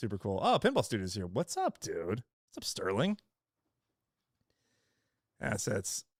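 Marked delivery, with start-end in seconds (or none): 1.3-6.0 raspy, hoarse, worn-out voice, fired up and swooping. Greeting people as they arrive while fired up, losing his voice. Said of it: "I'm losing my voice here".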